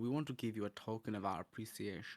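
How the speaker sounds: gentle, soft, camp German accent character voice. Showing the character voice one of his bits came from: camp, soft German character voice. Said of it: "that kind of camp, a little bit soft German thing".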